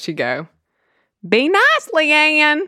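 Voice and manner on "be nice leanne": very high-pitched delivery. Imitating a family friend calling after her daughter: imitating a family friend. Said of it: "she'd be like this. Hold on, let me just muster this".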